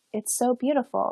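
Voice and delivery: weepy, tearful, overcome, moved-to-tears gush. Retelling what the girl across the table said in class: imitating someone crying. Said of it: "She just started crying and was like".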